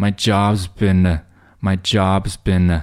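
very slow, careful, slowed-down shadowing pace.

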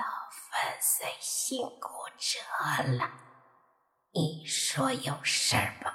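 hoarse, raspy, whispered skeleton voice. Narrating a story, a cracked skeleton skull speaks to Mo Fan, raspy skeleton voice. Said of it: "咔嚓咔嚓的发出沙哑的声音".

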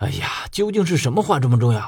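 plain reading voice

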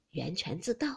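ordinary delivery

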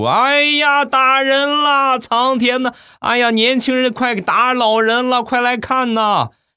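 put-on howling wail, very high, slow, drawn out. Retelling an old man's reaction to him, mock wailing and bawling. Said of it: "嚎啕大哭！".

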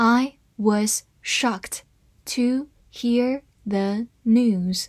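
very slow, careful reading, word by word.

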